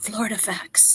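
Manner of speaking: hushed, secretive whisper. Retelling a whispered remark to the master gardener: imitating a whisper. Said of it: "And then I whispered to the master gardener".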